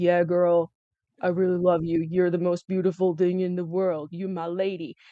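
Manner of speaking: flat, droning, uninflected monotone. Mocking how a guy talks to women, the speaker imitates his monotone. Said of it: "He's like monotone".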